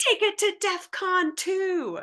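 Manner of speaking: very high, shrill, furious screaming yell. Narrating a scene, the speaker voices the dad's anger character giving an order: screaming. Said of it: "dad's anger screams".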